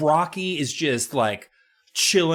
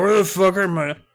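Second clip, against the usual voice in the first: pretend drunk voice with mock slurred words; 6 semitones higher, 5 dB louder than usual. Joking about an uncle who got super hammered: pretend drunk voice. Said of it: "Uncle Cal got super hammered and is just like".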